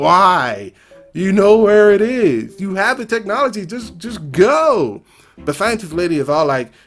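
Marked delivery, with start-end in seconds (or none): 0.0-5.0 mock screaming. Retelling reacting to a movie scene: imitating screaming at the screen. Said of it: "I'm screaming at the screen like".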